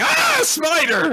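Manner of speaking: very high, startled, frightened shriek. Retelling how a character jumps at a spider: imitating a frightened scream. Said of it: "Ayame just screamed".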